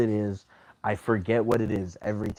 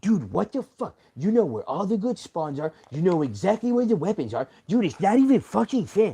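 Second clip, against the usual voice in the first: mock, cartoonish angry rant, high and swooping; 10 semitones higher, 3 dB louder than usual. Retelling a player's outburst during a game, mock cartoonish angry rant. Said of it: "it sounds like I'm obviously being, like, cartoonish".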